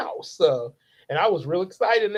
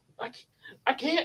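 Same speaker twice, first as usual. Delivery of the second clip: put-on terrified voice, higher and quieter; 8 semitones higher, 6 dB quieter than usual. Retelling being the only one not to morph, imitating a terrified voice. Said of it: "because I'm really terrified".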